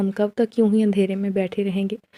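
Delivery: plain reading voice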